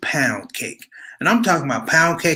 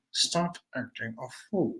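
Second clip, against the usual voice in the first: very quiet, low and hushed through clenched teeth; 5 semitones lower, 12 dB quieter than usual. Recalling what she said when he did something wrong, imitating her through clenched teeth. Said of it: "she would say it like through her teeth".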